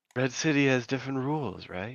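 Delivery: hushed half-whisper, very close to the ear. Player's character drops down behind a guy and speaks into his ear; half-whisper. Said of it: "just kind of whisper in".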